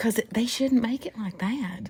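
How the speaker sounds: hushed whisper. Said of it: "Why you whispering all of a sudden?".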